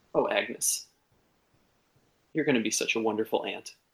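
relieved, tearful, crying speech. A woman throws her arms around Agnes and cries into her shoulder, relieved crying. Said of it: "starts crying into your shoulder and says".

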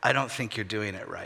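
low mutter under the breath, barely audible. Retelling how a wife commented on a tire change: imitating Suzanne muttering under her breath. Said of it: "just kind of under her breath".

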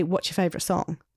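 ordinary talk

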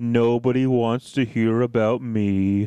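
slow, low, glum, drawn-out mopey donkey voice. Quoting a cop's reply when she asks him, in an Eeyore voice. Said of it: "in the most eeyore voice I can manage".

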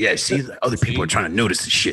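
put-on argumentative voice. Retelling an argument with the asshole side of himself: imitating his inner asshole. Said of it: "The asshole in me was like".

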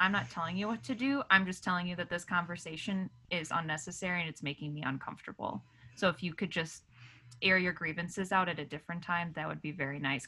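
ordinary talk

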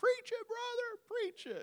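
mock very high holler. Retelling how a woman hanging out a window cheered on the preacher: imitating a woman hollering. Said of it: "she's hollering".

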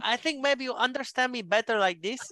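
put-on Spanish accent. Mocking how people talk to a spanish speaker, in a spanish accent. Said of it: "they get a Spanish accent".

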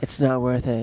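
put-on breathy, airy voice. Joking as a suicide hotline voice: put-on breathy voice. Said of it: "like, breathy voice?".

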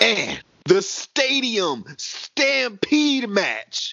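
very slow, swooping, drawn-out grand announcement voice. Announcing the next match on the card: put-on dramatic voice. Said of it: "Beware of my dramatic voice right here".

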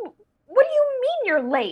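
very high storybook voice swooping around. Retelling voicing Alice on stage: Alice voice. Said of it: "as Alice, would say".

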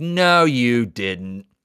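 irritating, annoying woman's voice. Retelling a woman's comeback to an author, in an annoying lady impression. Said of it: "your impression of her was perfect".

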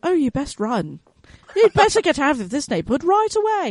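put-on fancy, la-di-da, posh English accent. Joking about a GPS in a neighborhood, giving it a highfalutin English accent. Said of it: "it gets this highfalutin English accent".

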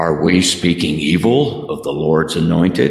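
grand, deep, godlike, pronouncing voice. Speaker retells their father stepping in at their house, imitating a godlike voice. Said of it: "in a very, you know, godlike voice said".

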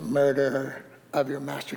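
mock, very quiet, hushed, twisted condemning tone. Retelling a woman's condemning words to Zimri, mock-accusing twisted tone. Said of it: "I know how she said that. That little twist in the voice".

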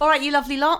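loud, high put-on London accent. Greeting the audience, a speaker from Manchester uses a put-on London accent. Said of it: "I don't know why I'm talking like that".

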